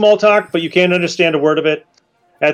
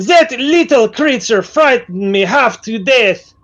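higher put-on accent, aimed French, sounding Romanian; 5 semitones higher than usual. Group taking turns at accents, doing a Yvette impression, sounding Romanian. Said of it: "That's Romanian".

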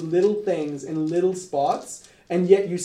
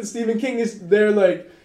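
ordinary talk

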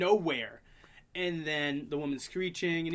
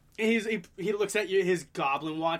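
normal talking voice

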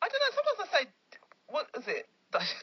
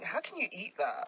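ordinary talk

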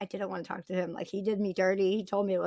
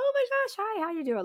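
super over-the-top, very high-pitched delivery; 14 semitones higher than usual. Retelling answering the ENT's call about biopsy results, retelling over-the-top greeting. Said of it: "Like super over the top".

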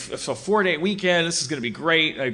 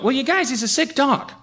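gently lilting, sing-song tone; 11 semitones higher than usual. Retelling what he told them about the panting dog, imitating his lilting tone. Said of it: "he just had that like lilting tone".

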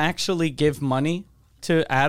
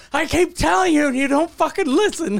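put-on man yelling, higher; 11 semitones higher than usual. Retelling how a man on the corner yelled at a squirrel: imitating a man yelling. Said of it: "he was yelling at a squirrel".

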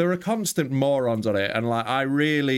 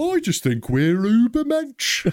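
very high, fake Birmingham (Brummy) accent; 10 semitones higher, 4 dB louder than usual. Joining a bit as a 1940s German: put-on Brummy accent. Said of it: "nineteen forties German Brummy".

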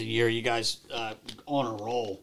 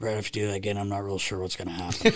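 low-key, hushed, soft, quiet tone; 2 semitones lower, 3 dB quieter than usual. Retelling a coach's warning to a player after a hard foul: imitating someone speaking quietly. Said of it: "real quietly turned and goes".

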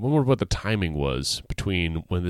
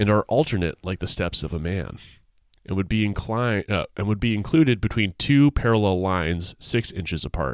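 ordinary talk

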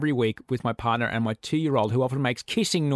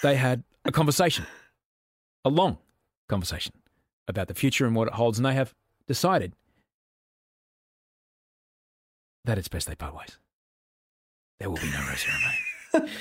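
swooping, over-dramatic emphasis on random words mid-sentence. Retelling own hosting line, done in William Shatner style. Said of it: "I'm doing an impression of myself".

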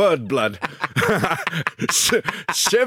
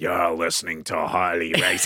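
very low, flat, level broken-robot voice; 12 semitones lower, 4 dB quieter than usual. Speaker tries doing someone, sounding like an old robot: Harley Race impression. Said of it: "He's like that. He's sort of like an old robot that's gone a bit wrong".

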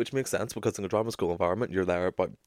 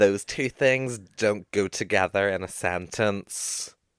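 ordinary delivery

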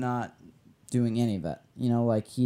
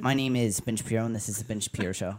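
rattled off quickly, nasal tone. Asked to go faster and nasalier, doing a fast nasal Ben Shapiro voice. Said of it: "faster and nasalier? ... that's a really good impression".

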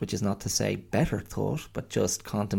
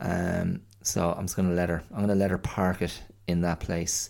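ordinary talk

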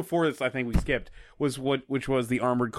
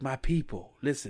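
breathy put-on voice, quieter; 4 dB quieter than usual. Imitating a line from a movie speech: imitating a breathy voice. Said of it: "has a very s-, breathy voice".

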